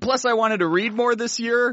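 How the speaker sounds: high, rushed, desperate, flustered babbling. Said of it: "so I tried desperately to explain myself".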